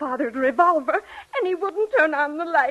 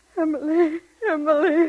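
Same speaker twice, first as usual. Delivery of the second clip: weeping voice; 2 semitones higher than usual. A mother calls out to her daughter emily while crying. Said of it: "Mother, don't cry".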